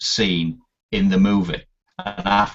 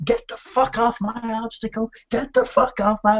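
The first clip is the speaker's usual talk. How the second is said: mock angry, frustrated drill-sergeant bellow. Retelling a scene where the sergeant yells at Pyle: imitating a sergeant shouting. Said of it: "he's shouting him as".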